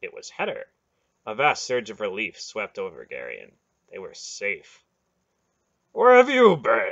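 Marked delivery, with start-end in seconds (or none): 5.9-6.9 very loud, high, booming, commanding voice. A man calls out to a rider approaching at dawn, demanding in a great voice. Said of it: "Beric demanded in a great voice".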